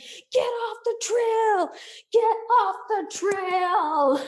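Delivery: mad, very high-pitched yell, drawn-out ending. Retelling a story, acting out what they yelled at the time: retelling yelling. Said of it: "I'm just yelling".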